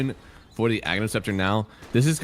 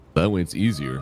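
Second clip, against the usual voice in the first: really deep put-on voice, lower pitch; 5 semitones lower than usual. Casting a match and switching to a put-on voice: really deep voice like James Earl Jones. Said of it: "this really deep voice that I absolutely cannot inflect with".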